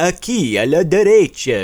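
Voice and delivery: very loud, high-pitched vampire voice with Transylvanian accent. Repeating a Spanish direction phrase, now in a Dracula voice. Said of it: "my Spanish Dracula impression".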